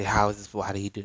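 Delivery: plain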